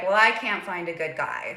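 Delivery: ordinary talk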